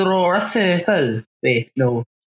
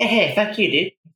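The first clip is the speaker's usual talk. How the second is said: put-on bratty cartoon kid voice. Answering another character's grudging praise: sounding like Eric Cartman. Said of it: "Sounded like Eric Cartman".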